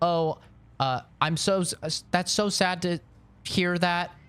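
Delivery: put-on high, bubbly, cheery anime girl AI voice.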